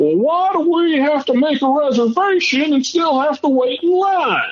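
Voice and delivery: put-on very high, shrill, angry old-man yelling. Retelling an old man's complaint at a cruise dining room: imitating an old man yelling. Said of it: "yelling at the maitre d'".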